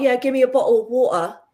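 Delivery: UK accent with t's dropped in "bottle" and "water". Speaker demonstrating how people in parts of the UK talk, UK accent dropping T's. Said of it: "My mum always taught me to pronounce my T's".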